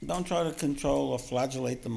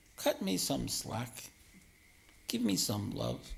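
sweet, gentle coaxing tone. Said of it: "but speak sweetly and say".

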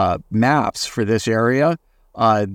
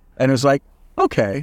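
ordinary delivery

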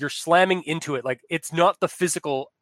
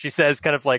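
ordinary talk, nothing marked

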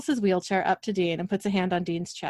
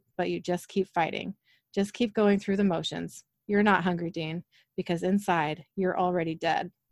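normal talking voice

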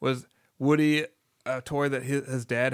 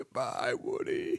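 mock dying whisper, hushed, breathy, barely there; 7 dB quieter than usual. Recalling a sad scene from the movie, in Wheezy's dying voice. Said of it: "dying voice".

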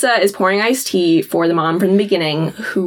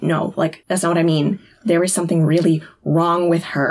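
ordinary talk

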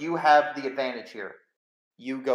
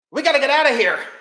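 alarmed yell, very high and very loud; 13 semitones higher, 11 dB louder than usual. A game master voices two men shouting as the players look at them in horror. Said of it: "the two men just shout".

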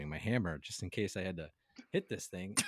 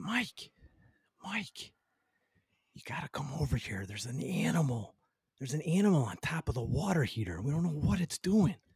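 put-on whisper, higher pitch; 6 semitones higher than usual. Retelling a client's late-night phone call: imitating a client whispering. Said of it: "he gets on the phone and he's whispering".

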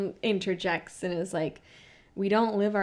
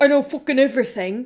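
badly done fake British accent, higher pitch; 6 semitones higher, 9 dB louder than usual. Retelling how Tom Sandoval pretended to be James Kennedy, bad James Kennedy impression. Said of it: "does a fake British accent".

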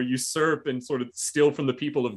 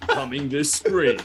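movie trailer voice-over announcer delivery. Retelling a scam call claiming to be the IRS: imitating a movie trailer announcer voice. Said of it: "hire that movie trailer guy".

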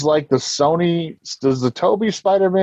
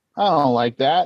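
ordinary talk

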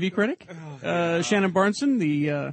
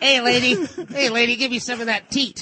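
put-on tough baby voice, much higher pitch; 5 semitones higher, 4 dB louder than usual. Playing a tough baby after formula, the speaker addresses a lady: tough baby voice. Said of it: "I shouldn't be doing the voices".

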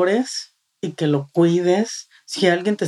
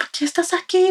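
put-on hysterical voice, much higher; 12 semitones higher than usual. Retelling what someone asked on arriving in intensive care, imitating someone hysterical. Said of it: "Pero bien histérica".

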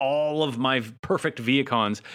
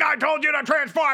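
mock robot voice yelling, higher; 3 dB louder than usual. Retelling a cartoon scene, imitating Optimus yelling. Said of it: "all he does is yell".

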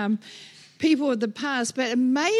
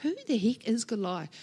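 ordinary delivery

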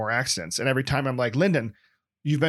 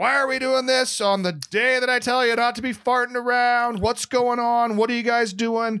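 very high-pitched, fed-up, acted annoyed yelling; 10 semitones higher than usual. Someone replays yelling at the others while walking to the bathroom: retelling own yelling. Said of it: "I'm yelling".

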